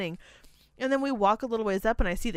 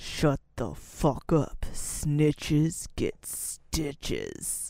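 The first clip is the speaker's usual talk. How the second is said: very low mutter under the breath, through clenched teeth; 7 semitones lower than usual. Retelling what he said to the girl sharing his table, retelling a hardcore under-breath mutter. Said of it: "hardcore under his breath went".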